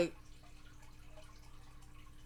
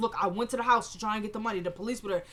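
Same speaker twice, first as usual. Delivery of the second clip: ordinary talk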